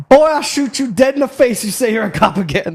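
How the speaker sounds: cartoon Southern rooster drawl. Retelling what a guy with a revolver said to a man claiming to be a cop, Foghorn Leghorn voice. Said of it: "he's Foghorn Leghorn as a human".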